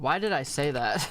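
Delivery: ordinary delivery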